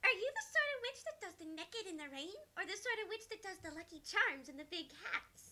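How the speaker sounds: high-pitched character voice. Asking a newly introduced witch what sort of witch she is, high-pitched voice.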